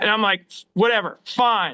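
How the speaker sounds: plain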